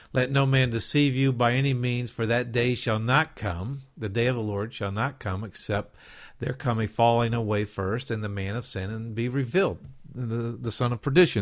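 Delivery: ordinary talk, nothing marked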